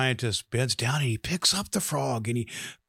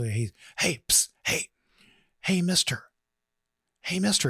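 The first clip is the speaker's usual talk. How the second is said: high-pitched, feminine talking frog voice; 5 semitones higher than usual. Storyteller voicing a hidden frog calling to a man in the swamp, feminine frog voice. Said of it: "It was a feminine voice".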